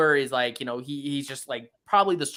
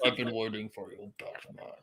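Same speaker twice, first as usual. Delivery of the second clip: put-on muffled villain voice, lower and quieter; 4 semitones lower, 9 dB quieter than usual. Imitating the Riddler's message to Batman: the Riddler's muffled voice. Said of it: "the muffled voice was a little".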